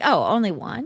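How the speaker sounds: ordinary delivery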